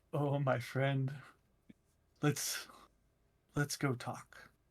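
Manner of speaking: hushed, slow, drawn-out whisper kept down. Nudging the others along to go get food, whispering. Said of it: "I'm I'm whispering this, like keeping it down".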